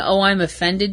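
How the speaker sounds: normal talking voice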